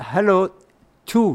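too said French-style. Retelling how a man at a lecture greeted him: French-like pronunciation. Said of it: "like French".

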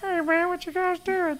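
put-on very high, thick southern accent. Recalling an old band's bass player, imitating him in a high-pitched southern voice. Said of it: "He had a really high-pitched voice, and he was the most southern guy".

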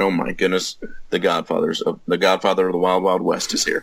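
ordinary talk, nothing marked

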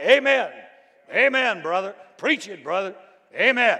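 high, loud, fired-up amen shouting. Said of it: "they'd be shouting".

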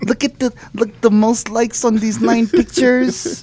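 high, slow Filipino grandma voice. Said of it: "Why do I sound like a Filipino grandma?".

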